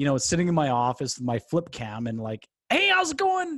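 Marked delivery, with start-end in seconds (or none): 2.7-3.6 very high, loud, excited, hyped radio host voice. Retelling early videos shot with a flip cam: imitating own excited radio-guy voice. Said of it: "crazy radio guy".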